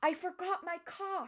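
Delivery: put-on very high-pitched, shrill shout. Retelling what the manager yelled: imitating the manager yelling. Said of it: "they yell".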